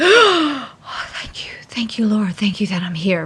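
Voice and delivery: breathless, gasped, then whispered with relief and thanks.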